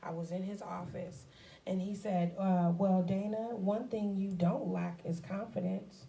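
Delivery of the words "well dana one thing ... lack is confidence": put-on, mock-condescending tone. Retelling what a man said to her in his office, imitating a condescending tone. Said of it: "he said it in such a condescending tone".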